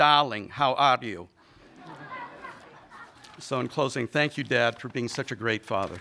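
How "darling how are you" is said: put-on heavy Hungarian accent laid on thick, loud, slow. Imitating a father answering the phone: imitating a thick Hungarian accent. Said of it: "saying in his thick Hungarian accent".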